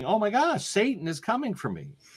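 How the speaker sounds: high, swooping, frantic terrified shout. Retelling a minister's outburst in a hypnosis session, imitating someone shouting. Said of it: "suddenly started shouting".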